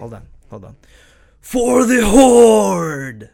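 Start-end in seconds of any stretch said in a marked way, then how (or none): 1.4-3.1 very loud, very high, booming battle cry, "horde" drawn out. Answering a request for a best horde battle cry: shouted horde battle cry. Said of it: "Give me your best for the Horde".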